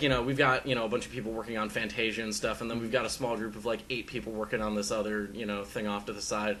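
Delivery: ordinary talk, nothing marked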